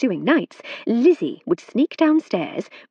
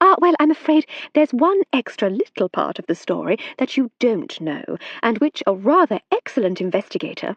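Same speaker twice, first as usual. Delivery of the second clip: ordinary delivery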